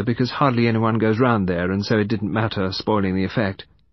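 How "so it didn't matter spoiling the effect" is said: ordinary delivery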